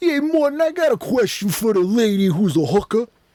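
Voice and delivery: trashy New Yorker voice. Imitating an audience member on a talk show: trashy New York guy voice. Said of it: "the trashiest New York guys".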